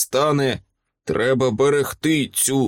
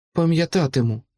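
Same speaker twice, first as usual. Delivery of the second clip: softly whispered, higher pitch; 4 semitones higher than usual. Bryn, on the riverbank after the druid vanishes, answers him; whispered. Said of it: "прошепотіла вона".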